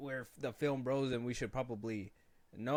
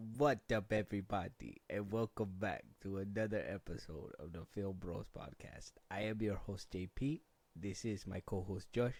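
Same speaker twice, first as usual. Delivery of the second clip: put-on spooky vampire voice; 3 semitones lower than usual. Opening a Halloween podcast episode and introducing his co-host, in a vampire voice. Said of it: "it's my vampire voice".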